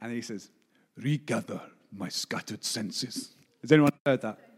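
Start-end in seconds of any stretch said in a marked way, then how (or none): 1.0-3.3 put-on deep, slow, low, hushed German accent. Quoting a speaker with a deep German voice, doing a Reinhard Bonnke impression. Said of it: "deep German voice".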